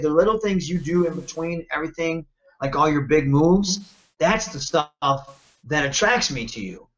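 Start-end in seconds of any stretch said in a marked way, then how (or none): none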